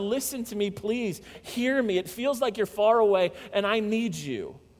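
acted pleading, begging tone. Voicing the psalmist who begs God to listen: psalmist's begging. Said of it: "He begs God".

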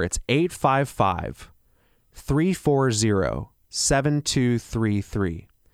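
slowed down. Repeating a phone number for listeners: a little slower. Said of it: "I'll say that a little slower".

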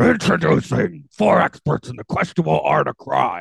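gruff, high character voice. Trying a character voice to introduce four experts, McGruff voice. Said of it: "I'm gonna go in and try my McGruff then".

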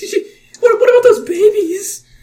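very high, loud, panicked freaking-out yelp. Voicing a panicking character questioning the players: panicked NPC voice. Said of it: "He's freaking out. He's like".

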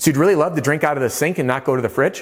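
voice rising in an upturn on fridge. Repeating a customer's words back to them, rising question inflection at end. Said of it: "with a question mark or an inflection at the end".

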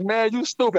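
mock words laughed out, laughing, amused. Retelling a woman's reply after an apology: imitating someone laughing. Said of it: "she just busts out laughing".

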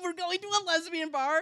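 usual speaking voice

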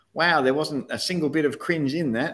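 put-on convincing Australian accent. Quoting one person's feedback on a Christmas service: really good Aussie accent. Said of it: "in a really good Aussie accent".

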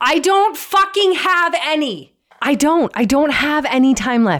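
exasperated, fed-up venting. A speaker explains their own situation, not putting it nicely, frustrated. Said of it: "So I'm feeling very frustrated".

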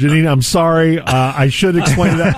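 ordinary delivery

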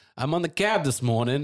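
horrible, bad put-on New York accent. Telling about a cab ride this morning, horrible new york accent. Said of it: "that was my horrible New York accent".

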